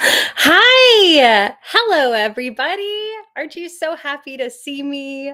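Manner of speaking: very loud, smiley voice with drawn-out "hi". Starting a voice bit by greeting everybody, smiling while talking. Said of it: "I have a smile on my face".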